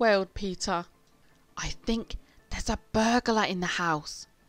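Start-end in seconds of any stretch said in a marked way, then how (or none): 1.6-4.3 hushed, urgent whisper. Horrid Henry speaks to Peter; urgent whisper. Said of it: "whispered Horrid Henry urgently".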